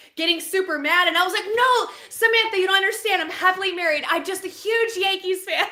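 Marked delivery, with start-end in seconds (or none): 1.6-5.7 stressed, pleading, trying-hard delivery. Retelling own words from a dream to an angry wife: retelling a stressed explanation. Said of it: "I was just stressed in my dream trying to explain".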